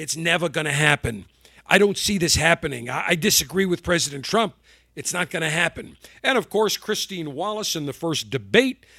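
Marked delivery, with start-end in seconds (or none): 0.0-6.0 put-on rasping New York accent. Retelling a doctor doubting the vaccine timeline: raspy New York Fauci voice. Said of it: "in his raspy New York voice".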